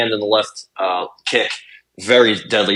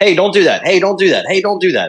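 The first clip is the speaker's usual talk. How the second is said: mock yelling, high-pitched, repeated over and over; 8 semitones higher, 3 dB louder than usual. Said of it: "you're saying it like you're yelling at them".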